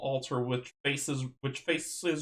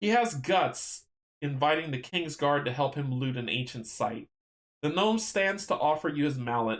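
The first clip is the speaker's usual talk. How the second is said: ordinary delivery, nothing marked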